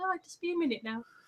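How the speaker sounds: very quiet, soft, hushed murmur. Retelling what he said once he started, imitating his really soft voice. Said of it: "he starts doing that really soft voice".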